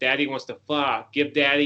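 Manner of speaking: ordinary delivery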